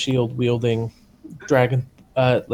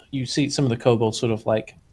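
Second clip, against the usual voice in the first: usual speaking voice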